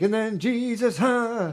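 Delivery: very high, very slow, drawn-out preacher voice.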